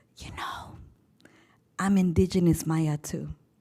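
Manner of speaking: timid, soft, slightly vulnerable whisper. Retelling what a ninth grade student said after the bell: imitating a shy whisper. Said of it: "she whispers shyly and with a little bit of vulnerability".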